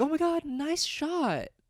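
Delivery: very high, drawn-out, sickly-sweet sarcastic voice. Speaker mimics how the listener says things too sweetly: mock overly sweet sarcasm. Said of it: "the tone of which is almost too sweet, and you, I feel like you're doing this sarcastically".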